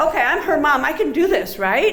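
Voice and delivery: ordinary talk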